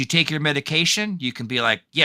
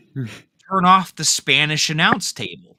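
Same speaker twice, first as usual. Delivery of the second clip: ordinary talk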